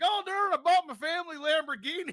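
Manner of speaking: very high, very loud, shrill trailer park guy voice. Retelling what a two-time lottery winner said: imitating a trailer park lottery winner. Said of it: "And he's like".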